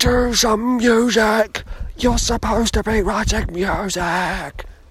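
forceful whisper-shout. Speaker acts out the ignored inner voice urging music, in a shouted whisper. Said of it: "my shouted whisper".

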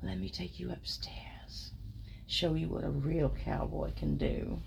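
close, breathy, private whisper in the ear. The speaker retells what a man whispered in her ear: retold whisper. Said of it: "whispers in my ear".

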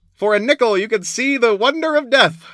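very high-pitched, shrill, loud carnival barker call. A man yelling beside a dead body on the street, carnival auctioneer voice. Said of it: "the auctioneer voice".

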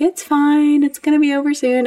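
put-on very high, gentle, calming, soothing tone. Recounting labor, the speaker quotes her midwifery team: imitating soothing reassurance. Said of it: "my wonderful midwifery team ... were just like".

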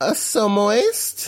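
flamboyant put-on voice, rising on "moist". On a show, listing gross words like moist: put-on voice rising on moist. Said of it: "What was up with your voice there? ... he says it like that sometimes ... make his voice rise so moist".

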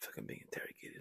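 fast, quick, unvoiced whisper.

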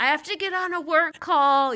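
acted shouting. Recounting yelling back at a woman from a block away, retelling own yell. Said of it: "like yelling".

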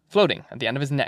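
ordinary delivery

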